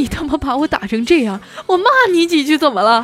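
mock tearful voice. Retelling what an overheard man said to a woman, mimicking a tearful voice. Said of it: "带着哭腔说".

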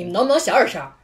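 put-on angry, furious, demanding yell. Speaker retells the neighbor pounding on their door, imitating an angry shout. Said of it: "大哥就特别怒气冲冲的来拍我们门".

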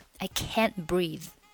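strong stress on the word can't. Teaching the english dialogue line i can't breathe: strong stress on can't. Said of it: "注意这里要重读一下".

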